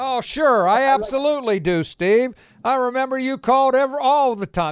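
playful fake-earnest ribbing. A radio host answering a caller who says he called before, teasing. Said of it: "No, I'm teasing you".

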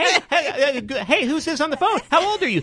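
very high-pitched, mocking young DJ voice.

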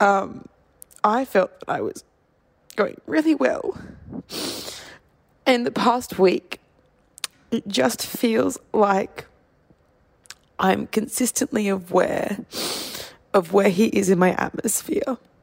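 sobbing through words. Recording a Christmas Eve note about recovering from a relationship, crying while talking. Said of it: "absolutely fucking sobbing".

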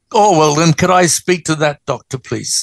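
plain

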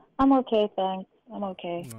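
sad, gloomy voice. Answering the other speakers' greeting, sounding sad. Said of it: "you sound so sad".

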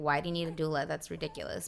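ordinary talk

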